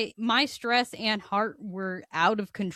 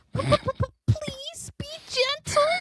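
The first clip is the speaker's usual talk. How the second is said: very high, squeaky, terrified, feminine voice; 3 dB louder than usual. Telling a dentist story, acting out own plea before the needle: retelling a terrified squeaky plea. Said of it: "in the most terrified, squeaky, very high pitched feminine voice".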